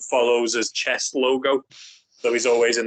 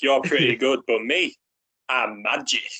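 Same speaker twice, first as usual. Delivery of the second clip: mock swaggering, self-satisfied, slow and cocky. Quoting a comic villain's taunt during a fight: cocky Bullseye voice. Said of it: "I love Bullseye's cockiness".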